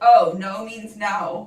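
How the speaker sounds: sarcastic, teasing, loud, drawn-out taunting tone. Reading out how a partner answered after cracking toes: imitating a mocking tone. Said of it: "he mockingly said".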